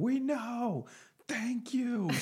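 very high, very slow, shrill drawn-out yell. Retelling how tour guide people reacted to a homeless man, imitating someone screaming. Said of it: "the tour guide people start screaming at him".

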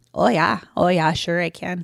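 Minnesota-style pronunciation throughout. Insisting to a doubter that they can do it; Minnesota accent. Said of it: "I can do a Minnesota accent".

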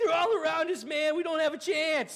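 full freak-out panic, loud and high-pitched. Imitating a panicking soldier in a movie: imitating someone freaking out. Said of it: "And he's just freaking out".

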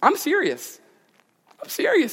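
voice going up, high, slow, dead serious. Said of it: "my voice goes up".

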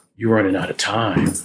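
put-on ghostly king voice. Describing a scene from a show, the speaker does a ghostly king voice. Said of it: "It's the ghost king's voice. And he's like".

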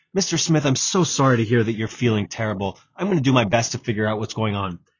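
gentle, caring, empathetic tone. Showing how to answer someone who says they're sick: softened, empathetic tone. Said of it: "softening the way you say things".

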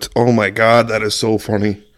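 helpless, tearful laughter through the words. A streamer reacts to something funny on stream, crying with laughter. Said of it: "I'm crying".

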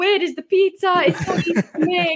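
put-on slight Italian accent, pitched very high. Speaker retelling what a guy standing there said; imitating a man's italian accent. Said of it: "in his little Italian accent".

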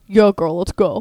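very loud, put-on, deepest booming bass voice. Retelling what a tall blonde woman said to another woman, imitating a very deep voice. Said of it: "the deepest voice".

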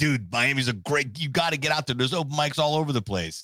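put-on Milwaukee-accented speech. Retell what a man from Milwaukee or someplace like that told you, as a Milwaukee impression. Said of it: "It's a great Milwaukee impression".

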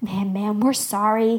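ordinary delivery

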